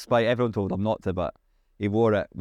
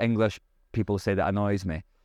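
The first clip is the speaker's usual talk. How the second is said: ordinary talk, nothing marked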